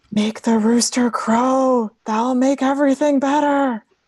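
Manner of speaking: high ghostly voice with a long drawn-out crow. Voicing a great-grandmother calling to a player from beyond the grave: great-grandmother calling from beyond grave. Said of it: "your great-grandmother calling towards you".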